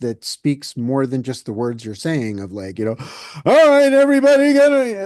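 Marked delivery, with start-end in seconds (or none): 3.4-5.1 very high, loud, jittery, alarmed, nerve-rattling tone. Imitating an instructor whose tone makes people nervous: imitating a nerve-rattling tone. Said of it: "not use that tone of voice that".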